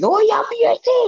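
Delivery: very high, excited shouting burst. Retelling own reaction to a goal: retelling own excited shout. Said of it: "I shouted".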